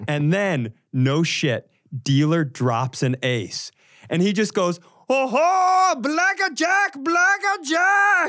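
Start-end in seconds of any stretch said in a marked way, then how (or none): 5.1-8.3 put-on old man cartoon samurai shout, much higher, louder, slower. Retelling an old man at a casino calling his cards, imitating old man's cartoon samurai shout. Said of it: "this old man just shouted his cards out".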